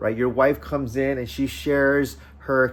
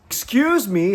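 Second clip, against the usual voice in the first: acted sharp, insistent, raised, pointed voice; 9 semitones higher, 5 dB louder than usual. Retelling the check-in lady's third unanswered ask, put-on pointed tone, louder. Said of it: "her voice got louder, more pointed in her tone".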